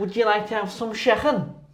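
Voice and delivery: high-pitched put-on Scouse Liverpool accent. Going first so the other speaker will try too: Scouse accent. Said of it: "For a Scouse accent".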